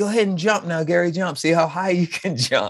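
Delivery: put-on yelling, screaming voice. Retelling an early memory about a brother: imitating Jeff screaming. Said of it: "who's always screaming".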